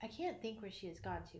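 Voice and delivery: ordinary talk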